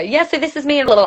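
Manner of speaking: words crammed together nonstop. Showing how saying all your words at once sounds: words rushed together. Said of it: "say all your words at once and go, ... like that".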